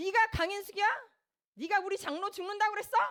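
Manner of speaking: furious, high-pitched shout. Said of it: "호통을 치시면서".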